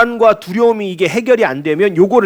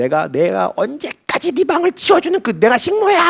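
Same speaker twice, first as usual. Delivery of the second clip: mock heated, nagging, angry scolding yell; 4 semitones higher than usual. Describing how a mother reacts to an untidy room, imitating an angry mother. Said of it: "막 이렇게 하면서 화를 내잖아요".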